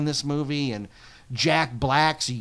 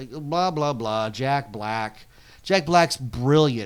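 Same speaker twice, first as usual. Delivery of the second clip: ordinary talk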